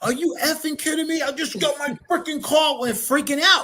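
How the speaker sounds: play-acted, high, heated angry outburst. Describing a traffic stop escalating with a cop, mock-angry driver arguing. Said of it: "People would be arguing".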